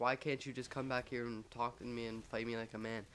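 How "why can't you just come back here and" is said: usual speaking voice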